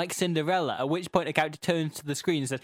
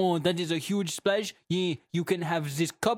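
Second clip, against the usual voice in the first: put-on French accent. Retelling a jumping-competition story, voicing the potato in a French accent. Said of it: "a potato with a moustache and a French accent".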